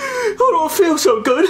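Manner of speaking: mock distraught crying.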